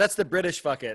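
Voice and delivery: ordinary talk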